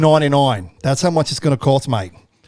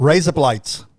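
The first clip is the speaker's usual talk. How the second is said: Australian-accented voice. Saying the line again, this time in an australian accent. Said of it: "but say it with an Australian accent".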